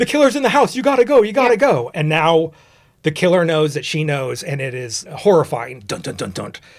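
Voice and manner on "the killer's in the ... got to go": panicky, high, frantic, urgent delivery. Retelling a movie scene where Nash warns the girl: imitating Nash losing it. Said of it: "Nash just loses it so fast".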